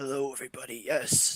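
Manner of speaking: groggy, low, hushed baritone just-woke-up voice. Speaker greets everybody while showing off their morning voice. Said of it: "this is my morning voice".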